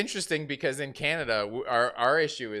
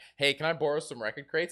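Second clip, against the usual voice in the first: ordinary talk, nothing marked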